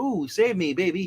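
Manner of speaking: usual speaking voice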